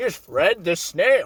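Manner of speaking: cartoon character voice, put on. Retelling a cartoon plot, doing a Plankton impression. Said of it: "There's my Plankton impression".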